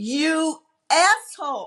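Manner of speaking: play-acted high, full-voiced, all-out scream. Retelling screaming at the killer during a scene: retelling a scream at top of voice. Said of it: "at the top of my voice".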